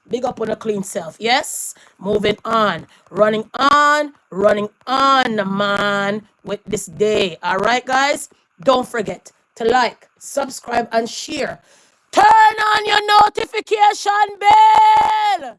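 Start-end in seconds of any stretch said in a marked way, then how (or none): 12.1-15.3 very high, stretched-out, drawn-out yelling. Ending a video and addressing viewers, shouting. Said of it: "Yes, I'm shouting".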